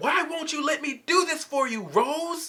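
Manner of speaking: very high-pitched screaming cry. Retelling a fight scene from the show: imitating Pearl screaming. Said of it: "Pearl just screams out".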